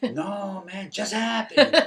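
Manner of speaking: put-on Mexican-American English accent. Retelling another man's second reply to him, in a Chicano accent. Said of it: "He had that Chicano accent".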